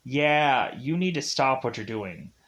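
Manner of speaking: ordinary talk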